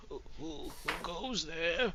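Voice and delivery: put-on high, little old woman's voice. Narrating a scene, a voice answers a knock on the door: old lady voice. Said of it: "you hear this old lady voice say".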